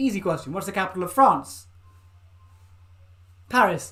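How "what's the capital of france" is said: ordinary talk, nothing marked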